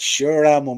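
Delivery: put-on accent of a kid from the American South. Retelling what a kid in a car seat told his mother, southern US kid accent. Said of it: "He's a real southern kid as well".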